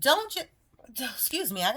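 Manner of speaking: high-pitched words broken up by hiccups. A speaker urging listeners toward a spiritual walk keeps talking, with the hiccups. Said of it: "I got the hiccups or something".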